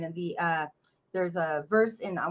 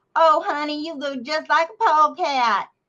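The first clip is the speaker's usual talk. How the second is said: put-on high, drawn-out voice of a little old Southern church lady; 9 semitones higher, 7 dB louder than usual. Retelling what an old lady at a prayer meeting told the speaker's mother: imitating old Southern church lady.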